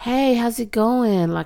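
put-on, imitation American accent. Demonstrating an impression of an American, in an American accent. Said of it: "Like American".

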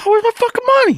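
very high-pitched, excited outburst. Joking with a friend about getting money back, Tim Dillon getting excited, super high. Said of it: "Doing the Tim Dillon thing when he starts getting like excited".

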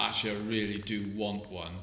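normal talking voice

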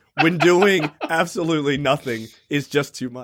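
ordinary talk, nothing marked

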